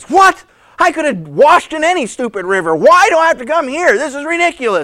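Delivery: angry, loud, high-pitched indignant outburst. Retelling a man who jumps up and down before storming off: acting out an angry outburst. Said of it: "he starts storming off".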